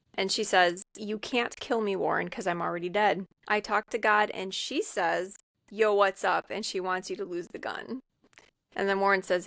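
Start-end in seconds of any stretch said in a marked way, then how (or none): none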